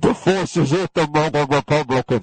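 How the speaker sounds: deep, big, loud announcer voice, projected. Mocking how others talk about their opponents, in a James Earl Jones deep voice. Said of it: "it's like they get James Earl Jones to come on out there and say".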